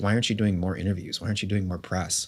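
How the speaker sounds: angry mother's nagging, scolding voice. Retelling a mother's complaints about too few interviews: imitating an angry mom. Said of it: "my mom gets very mad".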